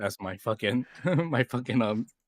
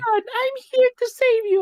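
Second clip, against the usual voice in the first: very high, very loud, slow, squeaky voice; 8 dB louder than usual. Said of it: "like Pika, Pika-esque".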